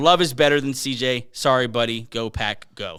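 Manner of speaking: ordinary talk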